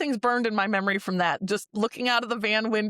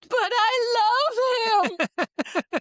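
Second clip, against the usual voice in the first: shrieking scream, very high, very slow, drawn-out; 12 semitones higher than usual. Retelling how mom screamed over the injured friend: imitating mom screaming. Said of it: "And she screams".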